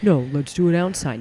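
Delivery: plain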